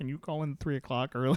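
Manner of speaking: put-on crying, tearful pleading tone. Retelling own words to a manager: imitating own crying. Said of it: "So I'm just up there crying to my manager".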